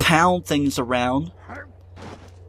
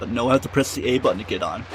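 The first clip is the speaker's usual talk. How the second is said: ordinary talk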